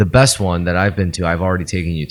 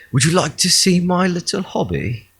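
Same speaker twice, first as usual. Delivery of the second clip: very high 1800s British gentleman voice; 11 semitones higher than usual. Mocking how an 1800s British man would talk about his shed: 1800s British gentleman voice. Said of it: "what a British guy would would would uh in in the eighteen hundreds".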